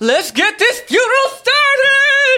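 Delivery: very high-pitched, rising, rousing shout. Throwing handfuls of gold into a funeral crowd, yelling to the crowd from the top. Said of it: "I'm yelling from the top".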